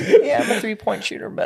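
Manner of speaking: fake very high-pitched voice. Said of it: "He's like".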